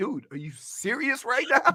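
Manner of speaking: high, laughing, ridiculing, taunting jeer. Retelling how someone stopped and ridiculed the speaker: imitating someone mocking and laughing. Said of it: "ridiculing me and laughing like".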